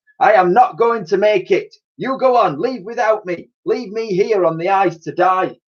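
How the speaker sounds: grand, heroic tone, pitched high. Narrator reads Titch speaking to Elsie, in his most heroic tone. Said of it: "in his most heroic tone he announced".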